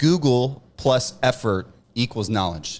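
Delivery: slow, heavily sarcastic pronouncement. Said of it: "I say that sarcastically".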